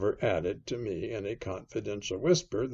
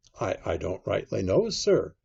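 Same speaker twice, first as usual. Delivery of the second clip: plain reading voice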